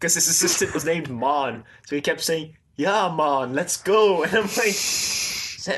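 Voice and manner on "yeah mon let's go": put-on Jamaican accent, slower. Recalling a serial character calling to his assistant, in Haid's pseudo Jamaican accent. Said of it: "like a pseudo Jamaican accent".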